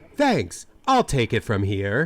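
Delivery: robotic computer voice.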